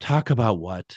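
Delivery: imitated exasperated woman's voice. Retelling a woman's voice through a spirit box: imitating an exasperated woman. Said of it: "you can feel the inflection".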